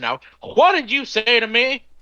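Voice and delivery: very high, swooping, furious, with an audible h in "what". Describing his customers, the speaker acts out a mock-angry customer. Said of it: "you know they're pissed off".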